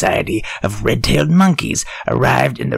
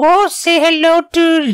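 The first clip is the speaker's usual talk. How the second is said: shrill, high, slow, drawn-out fake Mexican accent; 5 dB louder than usual. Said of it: "she does the accent now".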